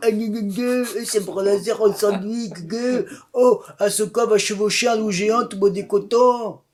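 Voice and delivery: high, whiny, casual mock fan voice. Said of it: "les grands publics Star Wars".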